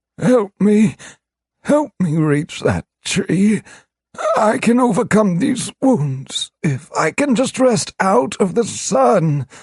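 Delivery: rasping, very high pleading voice. A wounded beast looks up at Korash and speaks, rasping. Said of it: "it rasped in a surprisingly human voice".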